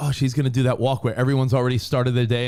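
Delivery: normal talking voice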